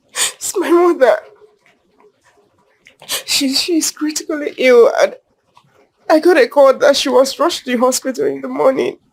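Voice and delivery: tearful, crying voice. Explaining that a critically ill mother was rushed to hospital, crying while talking. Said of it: "Then why are you crying?".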